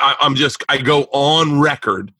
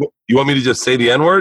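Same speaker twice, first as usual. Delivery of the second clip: usual speaking voice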